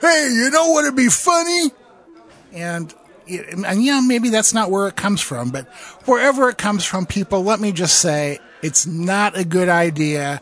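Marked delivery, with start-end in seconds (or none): 0.0-1.7 put-on tipsy, drunk-sounding voice. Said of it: "getting extremely drunk and going".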